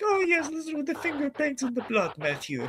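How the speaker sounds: very high, sing-song, sugary, cutesy voice swooping up. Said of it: "cutesy way".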